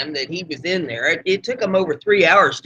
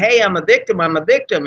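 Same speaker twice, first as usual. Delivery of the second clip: normal talking voice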